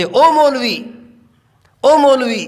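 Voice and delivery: slow, drawn-out, sarcastic, mocking taunting tone. Speaker retells how people called out to him after he grew a beard: mimicking a taunting call. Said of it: "तंजिया लहजे में मुझे कहते थे".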